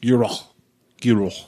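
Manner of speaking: put-on French accent and French pronunciation. Reading out a publisher's name, repeating it: French accent. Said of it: "are you laughing at my French accent?".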